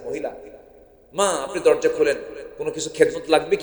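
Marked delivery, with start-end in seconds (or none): none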